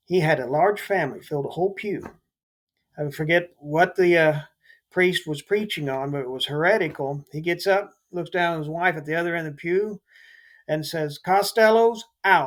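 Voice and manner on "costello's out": booming, loud, public-announcement-style delivery. Retelling how a man in church stood up and said this to his wife, in a loud voice. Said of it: "in a loud voice".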